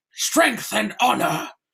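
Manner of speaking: orc creature voice. Explaining how he places his voice for characters, doing an orc voice. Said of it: "When I'm doing an orc or something like that".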